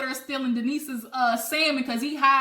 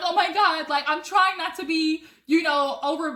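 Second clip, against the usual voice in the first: talking through crying, tearful words; 3 semitones higher than usual. Retelling how Teddy got up crying: imitating Teddy crying. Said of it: "She gets up crying like".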